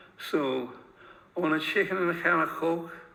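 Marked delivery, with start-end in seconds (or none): 1.4-2.9 Scouse accent with fricative k sounds. Explaining the Scouse fricative, playing a Scouser ordering a meal: Scouse accent. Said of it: "here's a Scouser asking for a meal".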